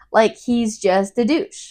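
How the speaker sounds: ordinary talk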